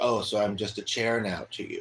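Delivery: ordinary delivery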